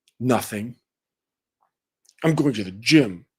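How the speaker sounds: mock moody, sulky, passive-aggressive tone. Acting out a cold reply to a partner's good morning: imitating a moody, passive-aggressive reply. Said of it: "acting like a moody, passive-aggressive woman".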